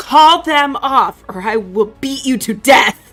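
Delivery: shouted threateningly. Player character shouting at the fallen enemy to call them off, threatening shout. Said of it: "just shouted him".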